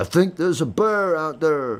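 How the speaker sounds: put-on high-pitched Southern accent. Retelling what a friend said after a crash in the woods: imitating Tom's southern accent. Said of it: "he sounded like he was a, a southerner".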